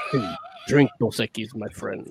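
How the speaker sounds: whispered, breathy, softened ad-style fake Mexican accent. Describing the beer commercial characters and how they talk, in a Dos Equis ad Mexican accent.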